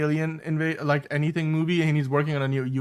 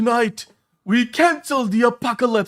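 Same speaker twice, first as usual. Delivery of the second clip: loud, high, failed attempt at British accent; 8 semitones higher, 6 dB louder than usual. Quoting one of the best movie speeches, from Pacific Rim: attempted British accent. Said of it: "I can't do the British accent".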